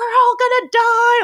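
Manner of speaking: put-on acted, high, shrill, loud, freaked-out child's panic. Describing a kid clinging to the mom on a merry-go-round, imitating a panicking kid. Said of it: "the kid is just increasingly like freaking out".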